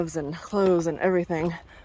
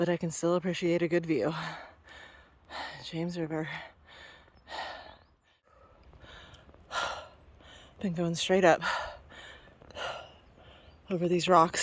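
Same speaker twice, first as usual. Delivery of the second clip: huffing and puffing; 2 semitones lower, 7 dB quieter than usual. Climbing up over rocks while filming, huffing and puffing. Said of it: "I am huffing and puffing".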